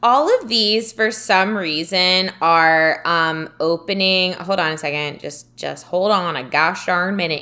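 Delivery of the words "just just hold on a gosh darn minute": put-on Southern drawl accent. Asking the other speaker to wait a moment: southern accent. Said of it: "We got a Southern accent going on".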